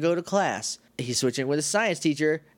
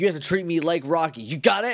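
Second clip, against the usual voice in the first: put-on yelling voice; 2 semitones higher than usual. Retelling what the strict teacher yells at the students: imitating someone yelling. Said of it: "he yells".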